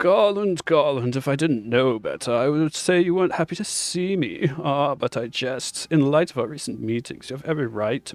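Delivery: self-satisfied, smug, sneering voice. Voicing Nero as he answers Garland, smug Nero voice. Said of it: "I would just say go smug asshole with him".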